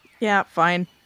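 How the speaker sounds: flat, reluctant, unenthusiastic delivery. Agreeing to a watch arrangement: unenthusiastic. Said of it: "don't sound so excited".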